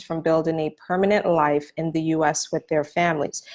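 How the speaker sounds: plain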